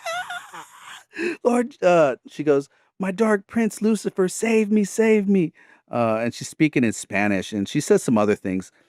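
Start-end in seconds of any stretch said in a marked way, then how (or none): 0.1-5.5 shrill, very high, bloodcurdling shriek. Speaker retells a woman's reaction to being rebuked, imitating a bloodcurdling scream. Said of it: "she does this blood curdling scream like".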